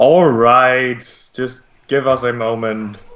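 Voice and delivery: slow, irritated, exasperated, annoyed tone. Voicing unseen workers answering an order: annoyed. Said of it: "replaced by an annoyed".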